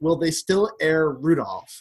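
snarky, sarcastic, swooping tone. Retelling a TV scene where Jim raises his hand: imitating sarcastic Jim. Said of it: "in ever sarcastic".

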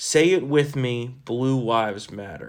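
plain

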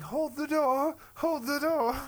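very high, loud woman's yell.

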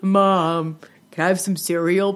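put-on deep little-kid voice.

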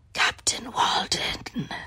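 raspy, hushed, gravelly whisper. Retelling how a man popped his head out and answered, in a gravelly voice. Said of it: "in like this gravelly voice".

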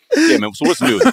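high, garbled words mashed by a full mouth. Mimicking another speaker eating peanut butter: mock talking with mouth full. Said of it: "it's when they bite it".

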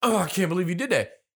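mock-disgusted reaction. Retelling how a girl reacted before walking off, mimicking her disgust. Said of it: "She's all disgusted and walks off like".

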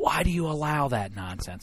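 soft hushed stage whisper, no voice. Retelling what two co-hosts say when they pull him aside: imitating someone half-whispering. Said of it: "they whisper".

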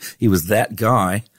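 put-on Australian accent. Telling a story about an australian man, speaking with an australian accent. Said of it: "he was Australian, so say it in Australian".

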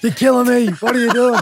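very high-pitched, shrill shouting. Describing their own habit of yelling at someone: retelling own yelling. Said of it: "I'm the master of just yelling".

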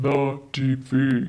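put-on very low register. Going through t-shirt style issues, repeating the style name in a very low voice. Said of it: "Got really low".

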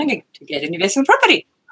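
uncertain, fast, wide-ranging rise like a question.

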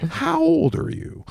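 very high, slow, creaky voice. Doing an impression while asking someone questions: Chris Hansen impression. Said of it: "Chris Hansen".

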